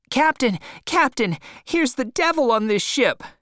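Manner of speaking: small, very high-pitched little shout. Reading a story, a young man runs off shouting for the captain: high little voice, shouting. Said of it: "shouting in a high little voice".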